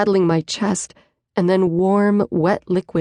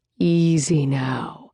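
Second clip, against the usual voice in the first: gentle, calming, soothing low voice; 4 semitones lower than usual. A man steadies the narrator, who nearly fell, in a soothing tone. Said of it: "he says in a soothing tone".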